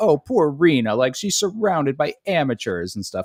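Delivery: sarcastic, mocking fake-sympathy voice. Retelling how two actors acted protective of Rena, imitating actors with put-on concern. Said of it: "they acted like they were, like, looking out".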